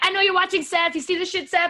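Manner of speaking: hollering, high-pitched, loud all-out scream. Retelling how a wrestler screamed at someone watching: imitating Rey Mysterio screaming. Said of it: "he was screaming and he was like".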